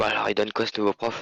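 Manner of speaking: hushed whisper. In a sketch, a student sits down in class and turns to a classmate, whispering. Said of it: "je chuchote à".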